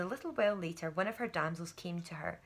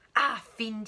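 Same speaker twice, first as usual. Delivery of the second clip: spoken in a hiss. Narrating a knight seizing his mother's arm as she raises a sword, hissed. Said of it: "he hissed".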